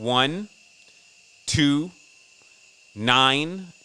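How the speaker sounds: drawn out slowly, one at a time, deliberate. Reading numbers aloud for listeners to write down: said slowly. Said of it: "I'll say it slow".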